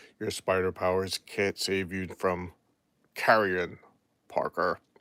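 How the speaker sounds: low, deathly, ghoulish dead guy voice. Reading a villain's line from a comic cover aloud: dead guy voice. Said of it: "That was my dead guy voice".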